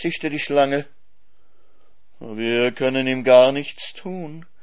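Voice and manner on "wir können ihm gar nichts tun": purring voice. The fox, among animals facing Bimbo and his swan protector, purring. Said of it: "schnurrte der Fuchs".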